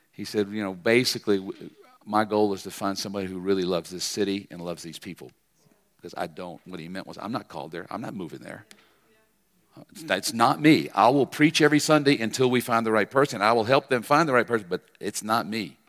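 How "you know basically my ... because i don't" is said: plain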